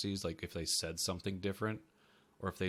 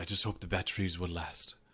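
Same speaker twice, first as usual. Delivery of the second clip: put-on deep, low voice in a British accent. Describing a tech-guy character named Saeed; Saeed's deep British accent. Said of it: "he would say it in such like a a deep like British accent".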